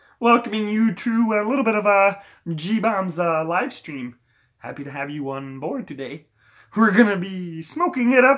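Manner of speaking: high frog puppet character voice. Welcoming viewers to a live stream: Kermit the Frog voice. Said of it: "Kermit the Frog here".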